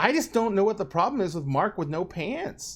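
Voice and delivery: innocent, swooping sing-song tone. Voicing a grinning character who speaks to another player: innocent voice. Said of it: "that innocent voice he's been using all night".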